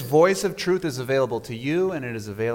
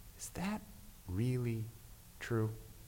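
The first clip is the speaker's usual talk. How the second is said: very soft, gentle, near-whispered voice; 15 dB quieter than usual. Speaker recalls a voice heard during a conversation, quoting it in a very gentle voice. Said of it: "very gentle voice".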